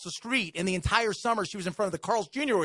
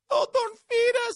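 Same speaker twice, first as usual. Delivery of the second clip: very high, put-on sobbing, fake crying voice; 4 dB louder than usual. Retelling a little girl begging them for money: imitating a girl's fake crying. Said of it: "She tried to cry".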